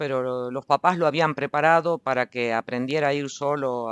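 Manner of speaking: ordinary talk, nothing marked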